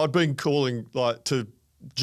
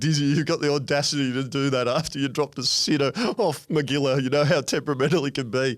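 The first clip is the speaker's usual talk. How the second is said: mock speech spoken through laughter. Retelling what a man behind the stumps said, imitating laughing while talking. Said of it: "He was crying with laughter and just saying".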